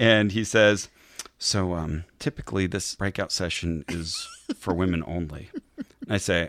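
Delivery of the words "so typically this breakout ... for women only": soft, firm delivery. Retelling what a man at a women's session said: soft but firm Mike Pence-like delivery. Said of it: "he sounds a lot like Mike Pence".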